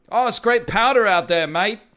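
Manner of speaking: put-on Australian accent, very high pitch, very loud. Speaker imagines an Australian snowboarder talking, in a put-on Australian accent. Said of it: "Like Australian, you're just like".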